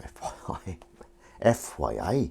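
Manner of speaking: a light touch of Geordie accent, very slow. Speaker doing admin shows how they sometimes say FYI, a bit Geordie accent. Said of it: "is it just me that goes a bit Geordie when I say F Y I".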